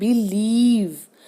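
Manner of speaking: believe with stress on second syllable lieve. Hindi-language English lesson on word stress: believe stressed on second syllable. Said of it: "ल पे आएगा क्योंकि हम ल को जोर देके बोल रहे हैं".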